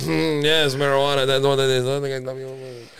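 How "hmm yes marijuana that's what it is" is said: normal talking voice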